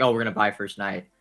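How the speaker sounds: ordinary talk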